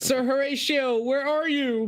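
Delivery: very high-pitched shouted yelling call-out. Voicing a very concerned character after it got dark, yelling out. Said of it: "yells out".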